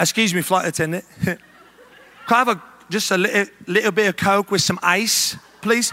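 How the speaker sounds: fake, put-on British accent, fully in character. Retelling a plane trip in full character with Jackie, addressing the flight attendant: fake British accent. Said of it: "let's do British".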